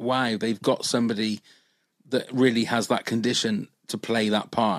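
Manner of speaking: plain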